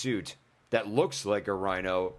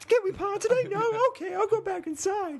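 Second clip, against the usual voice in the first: very high-pitched, made-up little voice. Joke with your guest by acting them out waiting to pod, put-on high-pitched voice. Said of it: "I gave you a high pitched voice".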